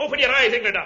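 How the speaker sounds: fake, put-on German accent. Urging the other man to open his eyes, in a phony German accent. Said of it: "you can't fool me with that phony German accent".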